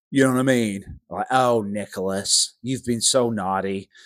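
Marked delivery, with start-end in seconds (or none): 1.3-3.8 slow, drawn-out, disappointed grandma voice. Showing how a disappointed grandma scolds: mock disappointed grandma voice. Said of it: "He sounds like a disappointed grandma".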